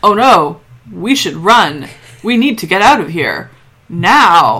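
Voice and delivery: calm, slow, stretched-out delivery. Recapping an episode, mocking a character's bad acting: imitating O'Neill's deadpan panic. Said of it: "in the most calm, deadpan manner".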